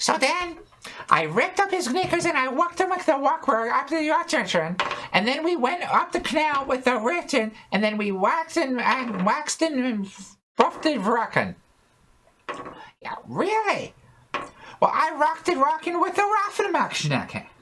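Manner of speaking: tiny, very high, squeaky character voice. Playing a character at a tabletop game, telling what happened, in a squeaky voice. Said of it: "in a squeaky kind of voice way".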